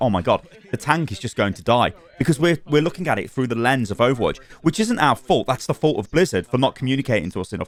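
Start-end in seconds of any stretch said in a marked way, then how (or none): none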